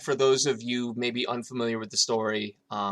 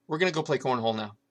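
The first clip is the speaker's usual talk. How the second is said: completely deadpan, matter-of-fact delivery. Retelling what Beth's daughter said to the speaker, imitating Sydney's deadpan delivery. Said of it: "with her deadpan delivery goes".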